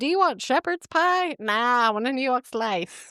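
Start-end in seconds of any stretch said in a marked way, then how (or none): 1.4-3.1 New York accent attempted with English accent underneath. Telling a story, the speaker answers a bartender: English New Yorker accent. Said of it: "you're doing it like an English New Yorker accent".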